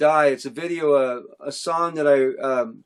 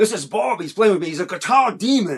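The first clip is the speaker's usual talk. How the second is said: big, put-on English accent; 4 semitones higher than usual. Retelling how John introduced him to others, John's big English accent. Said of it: "with that big English accent".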